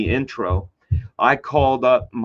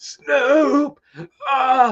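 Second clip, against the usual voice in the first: mock very high, winded, breathless gasping. Retelling calling out after being hit in the chest: imitating being out of breath. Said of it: "just out of breath".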